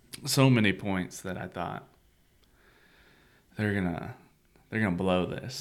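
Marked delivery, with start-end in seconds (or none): none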